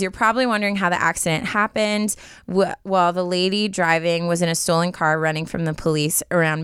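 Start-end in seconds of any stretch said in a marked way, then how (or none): none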